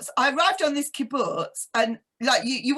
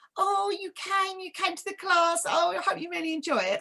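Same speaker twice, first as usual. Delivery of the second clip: chummy, gushing, pitched-up, all-friendly tone; 5 semitones higher, 3 dB quieter than usual. Retelling a woman's welcome at a class: imitating an all-friendly greeting. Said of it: "all friendly".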